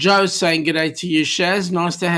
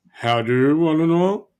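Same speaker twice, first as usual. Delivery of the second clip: attempted deep voice, reaching for a lower register. Read out a greeting from the Governor, in a failed attempt at Rob's deep voice. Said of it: "I can't get that deep voice as you do".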